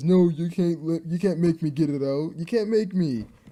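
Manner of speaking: bad dim-witted cartoon voice. Summarizing a cartoon episode and quoting a character, in bad Patrick voice. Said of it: "sorry if I'm doing the very bad voice acting".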